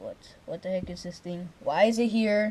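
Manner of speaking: plain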